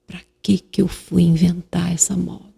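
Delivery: put-on whisper. Retelling what a sister said in the shower after birth: imitating someone whispering. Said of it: "por que que você tá me falando baixinho?".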